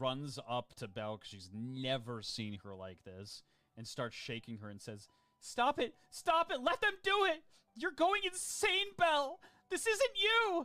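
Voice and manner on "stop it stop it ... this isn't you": shrill, very loud, very high, frightened pleading tone. Narrating a story: Colette shakes Belle and begs her, terrified pleading. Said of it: "very terrified".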